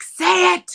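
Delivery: very loud, urging shouted yell. Retelling watching a scene, reenacting yelling at the tv: retelling own yell at the tv. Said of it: "I'm yelling at the T V".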